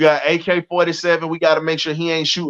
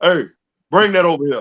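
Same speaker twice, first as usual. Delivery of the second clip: put-on old veteran voice, calling out. Imitating how Ron Simmons' voice used to boom: booming Ron Simmons voice. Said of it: "how Ron Simmons' voice used to be booming".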